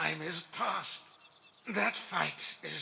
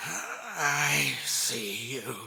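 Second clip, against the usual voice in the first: low, slow, drawn-out pained grumbling; 5 semitones lower, 3 dB louder than usual. Narrator voicing a tree spirit who speaks as if in discomfort, low, slow grumble. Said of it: "it's low and slow. He grumbles".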